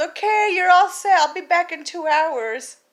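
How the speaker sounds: high-pitched, loud, breezy nurse voice.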